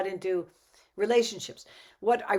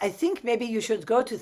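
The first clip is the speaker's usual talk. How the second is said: put-on beautiful French accent with Dutch colouring; 3 semitones higher than usual. Speaker quotes a woman who advised her about men: beautiful french dutch accent. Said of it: "in her beautiful French Dutch accent".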